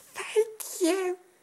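croaking, rusty, hoarse voice. The little engine, finally arrived at the bottom, says thanks in a croaky rusty voice. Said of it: "she croaked in her rusty voice".

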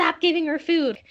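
high, loud, exasperated scolding tone.

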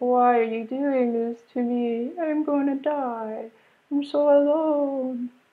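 mournful, high, slow, pleading lament. Voicing a sad drawn figure with hands up begging: sad pleading voice. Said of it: "this person's so sad".

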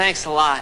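sounding down. Thanking someone who just fixed something for him, sounding sad. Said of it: "You sound sad".

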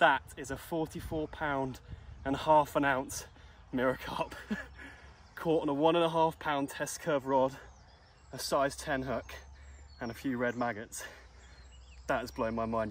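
soft, winded speech, still catching breath. Angler speaks just after landing a big carp, out of breath. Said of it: "You can tell I'm out of breath".

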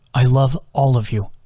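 ordinary delivery

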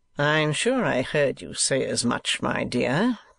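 icy, cold, cutting sarcastic tone. Ralph retorts to his niece Kate, cold and sarcastic. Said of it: "retorted Ralph in his cold, sarcastic manner".

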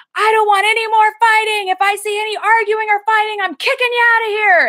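play-acted, very high, shrill scream. Retelling the manager screaming to the whole place, imitating her scream. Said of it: "she's like screaming to the whole place".

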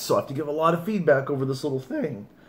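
cracked voice, breaking mid-line. The speaker explains why they give so much feedback, voice cracking. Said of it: "My voice cracked".

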